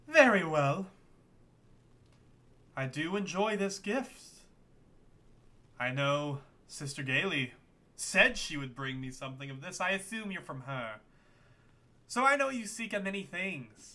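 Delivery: icy, coldly amused delivery. A game master voicing a character who receives a gift, with cold amusement. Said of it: "She kind of smiles with a cold amusement".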